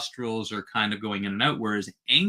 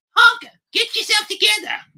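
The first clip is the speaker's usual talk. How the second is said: very high, raised, loud puppet voice; 8 dB louder than usual. Retelling a puppet skit, the speaker quotes Elmo in Elmo's voice. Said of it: "With that voice".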